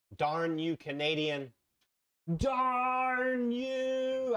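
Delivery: very slow, rising, teasing playful outrage. Speaker playfully curses a canadian after mapping out a long road trip, mock-angry. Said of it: "I shake my fist angrily at you".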